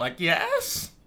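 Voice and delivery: yes with rising, questioning tune. Podcast hosts on ways of saying yes: rising question on 'yes'. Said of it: "yes with a question".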